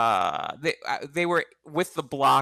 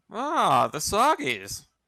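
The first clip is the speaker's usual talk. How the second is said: put-on high, swooping, slightly drunken voice; 6 semitones higher than usual. Doing a Captain Crunch impression after being asked for one. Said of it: "It sounds like a drunk Thurston Howell the third".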